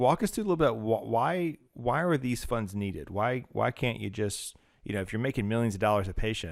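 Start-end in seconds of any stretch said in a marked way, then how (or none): 5.0-6.5 wry, sarcastic, jabbing tone. Asking a guest why hospital funds are needed: sarcastic. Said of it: "I say that with sarcasm".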